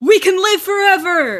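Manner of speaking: shrill, very loud, high full-volume yell. Voicing a leader who yells to a crowd: yelling to the crowd. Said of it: "he kinda yells in the crowd".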